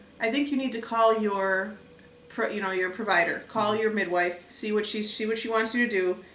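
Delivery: ordinary talk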